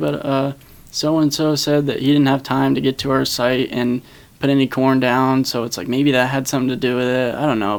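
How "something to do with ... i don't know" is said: normal talking voice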